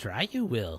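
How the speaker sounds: deliberately bad sci-fi creature alien voice. Host joking before the show opening, in a bad Yoda voice. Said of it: "with that bad Yoda voice transition".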